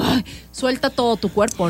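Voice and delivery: ordinary talk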